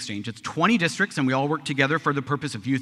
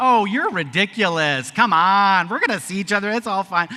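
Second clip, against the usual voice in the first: put-on mocking, teasing tone, slower; 6 semitones higher, 6 dB louder than usual. Retelling teasing the swedish exchange student before she left, retelling mocking teasing. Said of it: "I'd made fun of the Swedish exchange student".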